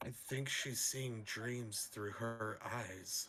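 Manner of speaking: loud, failed stage whisper. Voicing a character leaning over to another's ear: loud stage whisper. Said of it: "try to loudly whisper in his ear".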